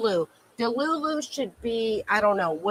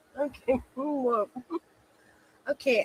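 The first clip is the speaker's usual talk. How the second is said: talking through laughter, higher; 4 semitones higher, 4 dB quieter than usual. Reacting to a remark about looking forward to Monday, laughing while talking. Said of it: "I'm so sorry I'm laughing".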